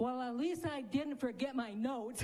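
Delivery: yelled exclamation. Recounting waking up from a dream about being late, retelling a yell. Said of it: "I'm just like yelling".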